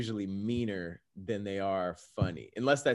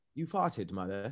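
put-on English accent; 5 dB quieter than usual. Imitating how a kid said it to his mother, in a mock english accent. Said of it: "Sounds English".

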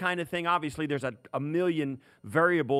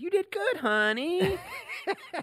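very high, slow, drawn-out grandma voice. Asked to say it the way your grandma does, you answer: imitating your grandma. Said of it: "say it like my grandma does".

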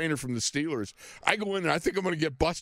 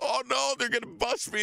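panicked voice, higher; 8 semitones higher than usual. Retelling sneaking past old teammates, imitating past panic. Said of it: "panicking because I think".

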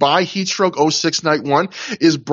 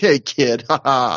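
put-on dismissive bullying jock voice, pitched lower; 4 semitones lower than usual. Describing a wrestler's heel turn, imitating Colt as dismissive bully. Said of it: "a very dismissive kind of bullying jock".

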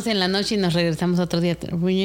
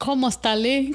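fake, attempted Italian, pitched higher; 5 semitones higher than usual. Answering others who ask for proof of being italian: attempting to speak italian. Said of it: "say something in Italian".

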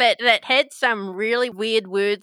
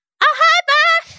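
tiny imp voice, much higher, louder, slower; 9 dB louder than usual. The narrator voices a little imp greeting a player, in a little imp voice. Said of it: "the little imp ... he says".

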